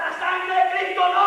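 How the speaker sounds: demonic screaming voices. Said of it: "ellos gritan".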